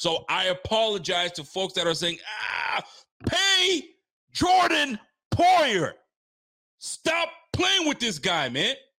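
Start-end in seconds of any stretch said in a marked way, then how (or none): 2.5-8.7 high, yelling rant, straight into the mic. Defending a player to viewers, yelling into the mic. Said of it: "I'ma yell it in the mic".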